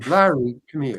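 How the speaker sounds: play-acted voice with disgust in it. Retelling how someone called a speaker over: imitating a disgusted call. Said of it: "like, disgusted".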